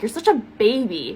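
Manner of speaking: chuckling, said through a little laugh. Speaker retells hugging him outside the chicken place: retelling a chuckling remark. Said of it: "I like chuckle".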